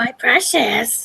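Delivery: rough, creaky croaking voice. Joking after a viewer's name is read as Smeagol: Smeagol voice.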